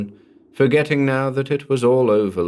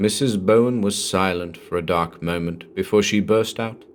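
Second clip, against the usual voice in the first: plain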